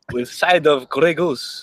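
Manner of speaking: slow, comical, put-on Russian accent. Joking about a hockey player's accent: fake Russian accent as Nico Hischier. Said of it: "It's funnier if I talk like he's Russian".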